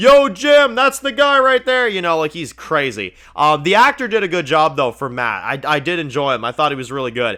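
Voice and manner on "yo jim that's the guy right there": put-on, very high, raised, drunken hollering. Retelling a wasted character's outburst at a party: imitating Matt yelling drunk. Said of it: "he's yelling shit".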